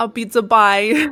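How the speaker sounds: New York accent. Showing how the Otter's voice in the story sounded: New York accent. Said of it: "I tried to make 'em from New York".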